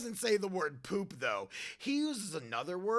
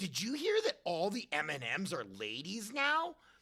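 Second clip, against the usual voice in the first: ordinary delivery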